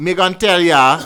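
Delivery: very high, very loud Jamaican patois accent. Showing how to do the accent: jamaican accent. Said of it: "the way you did "Me gon' tell ya."".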